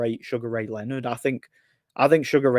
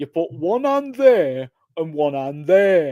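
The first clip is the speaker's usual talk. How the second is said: put-on Nottingham English accent; 5 semitones higher, 4 dB louder than usual. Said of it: "really strong Nottingham accent".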